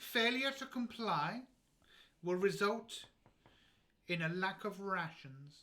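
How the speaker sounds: loud announcer voice over speaker. Voicing a base controller heard over a hidden speaker: base controller's voice over a speaker. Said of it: "And then you hear this voice".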